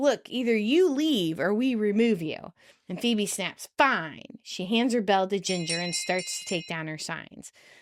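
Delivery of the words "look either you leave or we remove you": put-on tough, masculine voice. Storyteller retelling Bob warning Phoebe, acting out his toughest voice. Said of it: "in his toughest voice".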